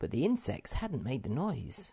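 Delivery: ordinary delivery, nothing marked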